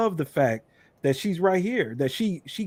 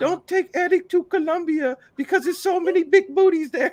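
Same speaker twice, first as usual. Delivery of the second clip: very high, squeaky put-on voice; 12 semitones higher than usual. Quoting what her mama said, in a put-on mother's voice. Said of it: "I try to do the madre voice".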